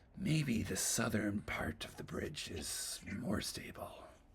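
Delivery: hushed, breathy whisper kept close. Voicing a whisper from the gloves to one player: whispering voice from the gloves. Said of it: "that whisper is like".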